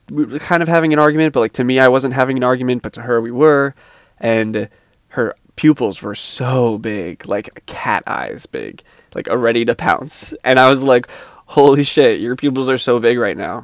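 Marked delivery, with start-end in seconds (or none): 11.5-13.7 silly, goofy blurt of surprise. Retelling a remark to a girlfriend during an argument: imitating own goofy tone. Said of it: "I said it kinda like that, being, like, goofy".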